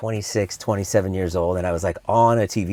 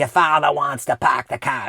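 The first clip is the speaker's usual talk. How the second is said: put-on high-pitched Boston accent; 5 semitones higher than usual. Speaker recalling his few Boston-y lines on The Simpsons: Boston accent. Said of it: "They were just Boston-y lines".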